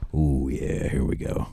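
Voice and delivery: slow, deep, breathy half-whisper. Reacting as the other speaker brings up Jack from Titanic: voice gone deep. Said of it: "I don't like how deep your voice got on that one".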